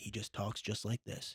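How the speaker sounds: very deep, low, near-whispered voice. Praising a Batman actor, the speaker demonstrates: Val Kilmer's deep Batman voice. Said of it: "just talks in a very deep voice".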